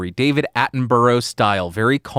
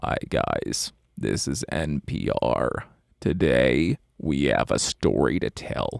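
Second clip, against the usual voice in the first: slow, soft, breathy, creaky vocal fry drawl; 10 semitones lower, 7 dB quieter than usual. Showing two ways to open an NPR story: vocal fry. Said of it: "start vocal frying into the microphone".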